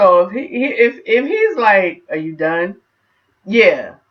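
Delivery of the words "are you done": needling voice dripping with sarcasm. Retelling what he might ask: imitating sarcastic tone. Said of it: "if it has that sarcasm in it".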